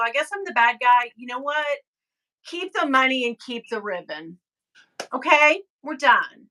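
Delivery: put-on, dripping with sarcasm. Retelling own reply to an Etsy seller after changing a rating: retelling own sarcastic words. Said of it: "I'm being sarcastic about the whole thing".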